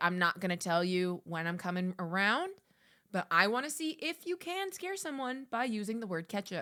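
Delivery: ordinary delivery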